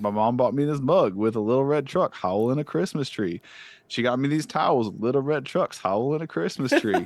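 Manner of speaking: put-on accent of the American South. Retelling a viral TikTok, the speaker quotes a guy in a Southern accent. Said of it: "he's got this great Southern accent. He's like".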